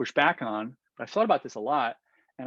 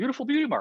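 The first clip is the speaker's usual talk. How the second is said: earnest, admiring, sincere tone, very high pitch; 11 semitones higher than usual. Showing how the same praise sounds when meant: said sincerely. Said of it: "you say sincerely".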